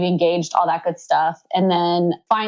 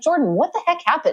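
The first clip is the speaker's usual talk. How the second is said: higher-pitched, exasperated voice. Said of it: "I'm like".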